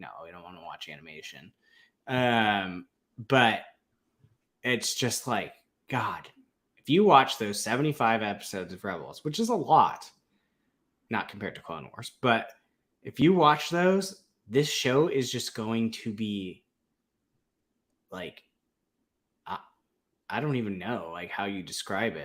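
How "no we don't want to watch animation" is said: low, soft, fast, stubborn tone. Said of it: "they're stubborn. They're like".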